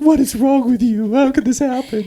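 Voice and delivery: very high, tearful, crying motherly lament. Retelling a mother at the dinner table upset over her child, imitating mom crying. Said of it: "she legit was crying like".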